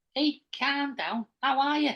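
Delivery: very high, put-on Scouse Liverpudlian accent. Doing a regional accent on request: Liverpudlian accent.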